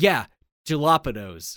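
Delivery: put-on offended, indignant, completely serious insistence. Retelling a sub shop customer's reply when corrected: imitating an indignant customer. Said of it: "gets very indignant".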